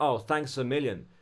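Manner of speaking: plain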